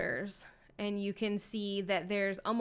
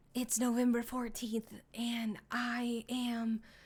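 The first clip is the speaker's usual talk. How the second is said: whisper, higher and slower; 3 semitones higher than usual. Describing a video of a man hiding in a bush, whispering to the camera. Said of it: "he's like whispering to the camera".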